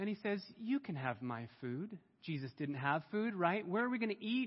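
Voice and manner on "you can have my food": put-on English accent, small boy, soft and slow. Telling of Jesus feeding the crowd, the young boy offers his food, English accent, little boy. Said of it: "He has an English accent".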